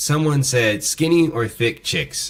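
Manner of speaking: normal talking voice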